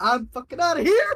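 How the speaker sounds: panicked scream in gnome voice. Voicing a fleeing gnome as he looks back: gnome screaming. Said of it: "fucking screams as he's like".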